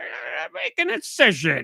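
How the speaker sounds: very slow, rough, creaky, half-human zombie drawl. Retelling what the zombie doctor said in the game: imitating a zombie doctor's voice. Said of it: "his voice turned at least kind of human".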